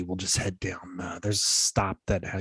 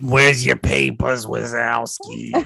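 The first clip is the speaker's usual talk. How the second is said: very loud, rasping, gravelly, creaky cartoon character voice; 4 semitones higher, 8 dB louder than usual. Playing along after another player says the voice sounds like Monsters, Inc.: Monsters, Inc. character voice. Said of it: "from Monsters, Inc".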